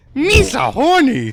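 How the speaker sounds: very high, very loud, shrill, goofy alien voice. Teasing a friend about doing a voice while looking at her: Jar Jar Binks voice. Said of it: "I do a good Jar Jar".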